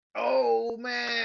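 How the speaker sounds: very high, very loud, raspy, rough put-on voice. Showing what someone named Lost sounds like: impression of Lost. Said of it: "this is my impression of Lost".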